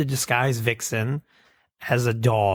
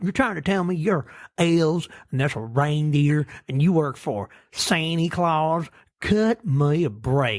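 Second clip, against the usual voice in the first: put-on, pitched-up southern mayor voice; 5 semitones higher than usual. Retelling a story, voicing the mayor questioning the elves, in a southern mayor voice. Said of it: "A very southern mayor vibe".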